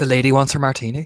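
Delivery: said pleasantly but with menace. Voicing a character at a bar: said pleasantly but menacing. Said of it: "he just says very, like, you know, pleasantly".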